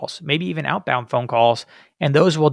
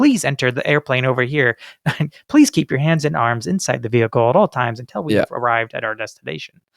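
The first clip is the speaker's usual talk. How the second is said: put-on formal robotic announcer voice. Imitating an airplane safety training video: formal robotic safety announcement voice. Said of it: "it's very robotic sounding".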